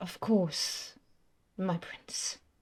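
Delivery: hushed whisper. Game character answering her prince, in Aunt Molly's whispering voice. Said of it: "her whispering voice".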